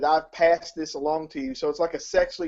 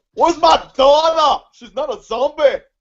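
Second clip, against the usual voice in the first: very loud, high-pitched blaring voice, belted out; 10 semitones higher, 9 dB louder than usual. Imitating the movie's star after describing the zombie trailer: Arnold Schwarzenegger impression. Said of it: "Is Arnold Scottish?".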